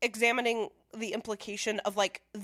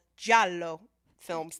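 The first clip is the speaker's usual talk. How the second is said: put-on Italian accent, louder; 3 semitones lower, 5 dB louder than usual. Describing Italian-made slasher films, in a put-on Italian accent. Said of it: "That's my best Italian accent".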